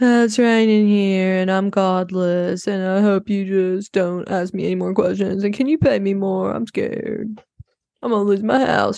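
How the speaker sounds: teasing, mocking send-up voice. Show how Lauren was the whole episode, imitating Lauren. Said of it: "This was Lauren the whole episode".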